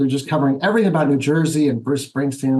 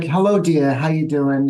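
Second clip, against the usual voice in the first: put-on New York accent, slower. Describing how a woman from Manhattan talks, imitating a New York accent. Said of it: "that kind of accent".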